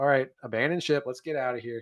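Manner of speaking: breezy, unbothered, nonchalant, offhand delivery. Retelling a movie character ordering to abandon ship: nonchalant Edie Falco impression. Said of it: "just says it so nonchalantly".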